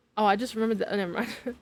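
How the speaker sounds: ordinary delivery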